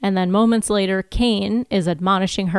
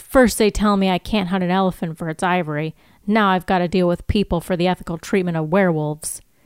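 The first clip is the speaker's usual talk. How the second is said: ordinary talk, nothing marked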